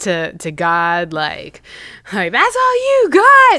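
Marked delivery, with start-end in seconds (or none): 2.3-3.6 mock shrill, very high-pitched shout. Retelling the storm scene from a movie: imitating Lieutenant Dan yelling. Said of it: "Lieutenant Dan's yelling".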